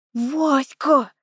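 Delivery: shouting in a whisper. The narrator calls out to Vaska, whisper-shouting. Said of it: "шепотом заорала я".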